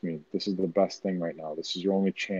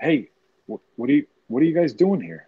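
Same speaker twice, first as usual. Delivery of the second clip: loud, high-pitched yelling; 6 semitones higher, 7 dB louder than usual. Peering around a corner in character, calling out to a troll unit: yelling at them. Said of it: "I yelled at them".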